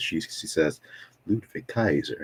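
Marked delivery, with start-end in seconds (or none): 1.3-2.2 sugary, fond, sweet ring announcer voice. Imitating how a woman announces people's names, imitating sweet name announcement. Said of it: "Like she says that all sweet".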